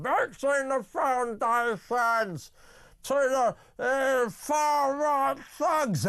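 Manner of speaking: put-on nasal politician voice. Speaker practising an impression after being told to sound more nasal: nasal Keir Starmer impression. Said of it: "talk right through the back of your throat and your nose".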